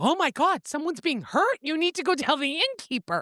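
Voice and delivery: mock frantic, alarmed, fast, panicked blurt. Retelling a book scene, a character hears screaming at night: imitating a panicked woman. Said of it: "and she's panicking".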